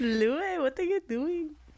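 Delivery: put-on slight Indian accent. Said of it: "why do you make him sound Indian".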